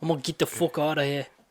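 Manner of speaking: put-on British accent. Continuing the quote of an actor quitting the show: put-on British accent. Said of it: "That sounded like Shrek, kinda".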